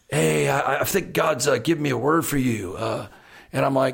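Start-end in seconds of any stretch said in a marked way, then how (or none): 0.1-2.7 put-on laid-back, mellow hippie voice. Imitating Kent, a worship leader, as the eternal hippie: laid-back hippie voice. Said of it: "he's always, like, the eternal hippie".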